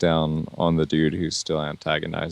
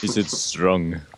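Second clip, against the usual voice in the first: put-on German accent. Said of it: "With a German accent, of course".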